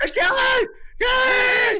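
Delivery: yelling, pitched very high, shrill and loud. Calling out for someone across the room: yelling a name. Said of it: "I'm yelling your name right now".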